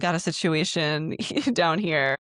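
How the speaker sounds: put-on panicked, pleading voice. Retelling a friend's urgent request for a plunger: imitating someone in a panic. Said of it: "In a panic".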